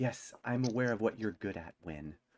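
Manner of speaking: hushed stage whisper muttered under the breath. A narrator voices a character answering Win: low hushed half-whisper. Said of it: "utters like in a low hushed whisper".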